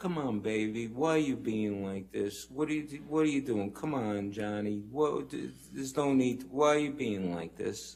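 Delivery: mocking, needling, taunting, coaxing pleading tone. Retelling what was said during an argument: imitating a taunting tone. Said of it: "And it was taunting".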